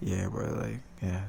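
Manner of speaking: flat monotone voice. Speaker imitating how he used to talk, in a flat monotone voice. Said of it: "my monotone voice is like".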